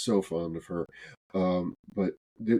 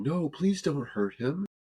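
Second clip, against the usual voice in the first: put-on, high-pitched, imploring, begging voice; 8 semitones higher than usual. Retelling a fight someone tried to stop: imitating someone begging. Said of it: "she starts begging me".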